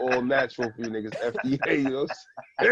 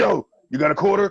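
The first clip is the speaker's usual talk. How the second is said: put-on aggressive pushy voice, higher and louder; 7 semitones higher, 5 dB louder than usual. Acting out a panhandler at the door: imitating an aggressive panhandler. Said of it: "the aggressive panhandler is at your door".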